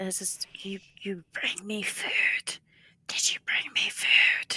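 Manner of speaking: lofty, arrogant, haughty whisper. The game narrator voices something a player hears in their mind, a haughty whisper. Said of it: "you hear this haughty whisper".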